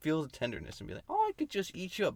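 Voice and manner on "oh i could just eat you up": put-on doting granny voice, very high-pitched. Pitching a scary movie about a cannibal grandma, doting grandma voice. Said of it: "Cannibal Grandma, where she pinches your cheek".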